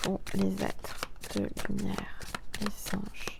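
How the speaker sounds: quiet, hushed delivery.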